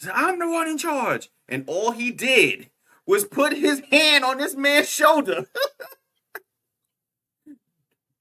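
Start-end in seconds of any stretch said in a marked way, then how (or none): 0.1-1.3 high-pitched mock yell. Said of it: "when the dude was just yelling at him".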